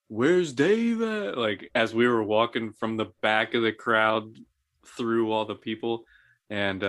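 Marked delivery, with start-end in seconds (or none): 0.2-1.4 loud, high-pitched shouted yell. Retelling walking through the crowd at prom: imitating Sean yelling. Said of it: "I remember Sean yelling".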